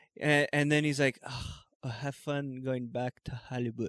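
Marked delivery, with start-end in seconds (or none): 1.3-3.9 put-on dainty, condescending Spanish-accented English. Retelling what a man said when leaving: imitating Spanish-accented English. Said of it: "in his Spanish accent, trying to speak English".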